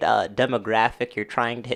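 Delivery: sarcastic tone.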